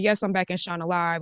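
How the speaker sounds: ordinary delivery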